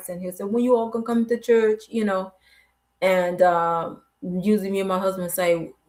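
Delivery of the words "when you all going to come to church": put-on Jamaican accent, put on. Retelling what the father-in-law says about church, imitating a Jamaican accent. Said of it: "he's Jamaican, so he has an accent".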